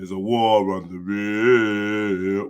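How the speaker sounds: put-on very deep bass voice, very slow. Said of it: "imitating my own deep voice".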